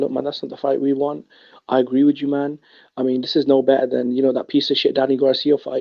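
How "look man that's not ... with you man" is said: ordinary talk, nothing marked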